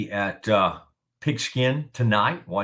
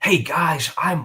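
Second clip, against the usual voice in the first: put-on earnest churchy voice, pitched higher; 7 semitones higher, 3 dB louder than usual. Imitating an old college roommate who announces games: imitating Blair Browning's earnest voice. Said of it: "Blair would have a real".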